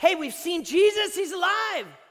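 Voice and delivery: high, loud excited shout.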